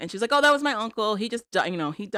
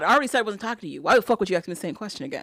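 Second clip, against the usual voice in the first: mock snappish, aggressive snap. Retelling a story, quoting the kid snapping back, retelling an aggressive snap. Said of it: "he gets real aggressive and real snappish".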